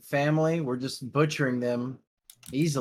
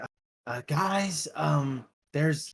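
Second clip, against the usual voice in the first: very slow, halting whisper-shout; 2 semitones higher than usual. Player in a cave trying to keep voice down yet reach everyone: whisper-yell. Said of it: "kind of like in a in a whisper yell".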